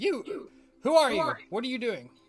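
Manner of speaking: very loud, high, booming, swooping holler. In a tabletop game, a player's character is shouting at a creature. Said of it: "shout out".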